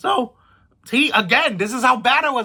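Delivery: voice cracking. Speaker recounts a wrestler's entrance at a live show; voice cracking. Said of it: "My voice is cracking".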